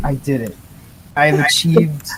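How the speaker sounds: normal talking voice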